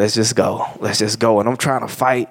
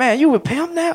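mock-hurt man's voice, much higher. Retelling how a man reacted in an argument about his sister: imitating a hurt man. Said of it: "It's like he was hurt".

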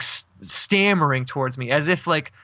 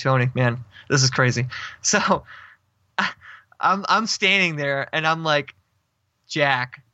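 ordinary talk, nothing marked

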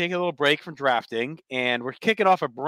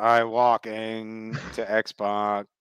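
very slow, drawn-out robotic voice-box voice; 3 semitones lower than usual. Joining the group's joke about walking, Kane voice-box impression. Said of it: "the voice box".

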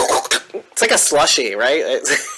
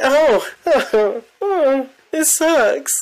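very high, slow, drawn-out put-on letdown; 10 semitones higher than usual. Acting out how they'd react when taken down: fake disappointment. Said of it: "faking it".

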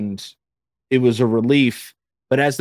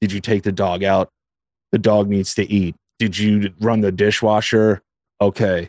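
mechanical, robotic, low, flat monotone; 5 semitones lower than usual. Describing low moods to another speaker, imitating own robotic monotone. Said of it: "So it becomes like very robotic".

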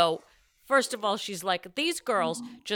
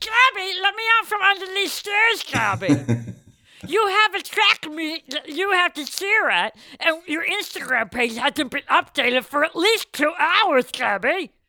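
loud, high-pitched calling voice; 9 semitones higher, 6 dB louder than usual. Asked by another speaker to put in Gabby's mom, she does it: imitating Gabby's mom. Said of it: "Put Gabby's mom in".

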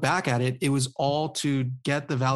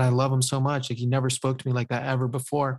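ordinary talk, nothing marked

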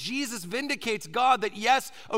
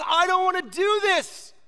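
high, loud, fearful cry.

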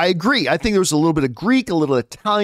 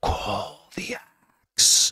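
soft, breathy, barely voiced whisper; 8 semitones lower, 6 dB quieter than usual. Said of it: "whispering to, to Thor".

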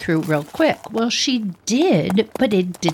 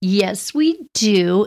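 put-on small, little young-girl voice. Retelling how the girls answered her, mimicking their little voice. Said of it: "In that little voice".

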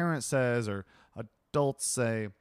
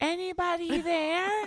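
put-on tiny child's voice, very high pitched. Describing little kids heard while playing the game, imitating a little kid. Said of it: "I hear little kids go like".

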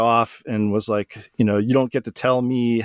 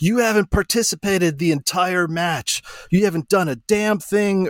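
screaming, laying into someone; 8 semitones higher than usual. Retelling how a man behind started accusing, imitating someone screaming. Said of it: "he starts screaming at me".

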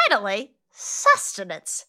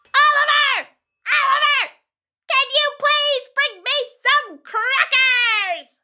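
shrill, very high yell; 10 semitones higher than usual. In a comedy scene, showing Kyle how to call out, yelling for help. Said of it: "You yell like this for help!".

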